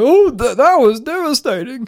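hoarse, croaking voice. Retelling own words after the film ended: imitating own croaky voice. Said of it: "in my croaky voice".

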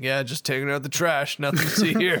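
put-on flat deadpan delivery, woman's manner. Describing a woman laying into a man without any fuss: mock-deadpan retelling. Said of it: "her expression is so deadpan".

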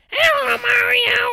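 very high, loud, slightly rough squeak. Explaining how to do Marge, the speaker demonstrates a Toad voice. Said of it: "the same way you do a Toad voice".

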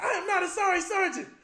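shrill, booming, very loud, high drill sergeant yell. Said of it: "dude in my face yelling".

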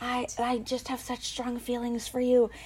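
very quiet, barely audible half-whisper. Imitating a contestant half-whispering to Clayton all season: imitating Rachel's half-whisper. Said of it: "she was whispering because".

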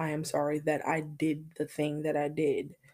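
usual speaking voice

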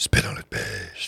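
rough, raspy, creaky demonic voice. Joking about getting on Satan's good side, in a Satan voice. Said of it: "that's a good Satan voice".

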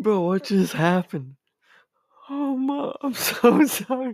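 laughing uncontrollably. The host apologizes to listeners mid-episode, laughing uncontrollably. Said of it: "I can't stop fucking laughing right now".

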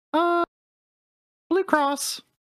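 fake woman's voice, pitched very high. Retelling a scam call to the others: imitating own put-on woman's voice. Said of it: "replying in a woman's voice".

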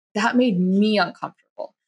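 ordinary delivery

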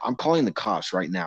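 ordinary talk

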